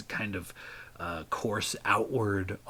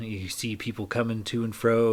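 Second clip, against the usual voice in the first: plain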